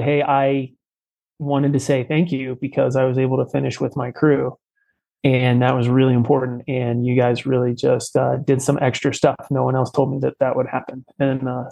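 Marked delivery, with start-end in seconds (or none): none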